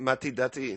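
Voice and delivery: put-on Russian-accented delivery. Speaker quotes her Russian friend Anna's phrase: imitating Anna's Russian accent. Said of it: "her and her Russian accent saying".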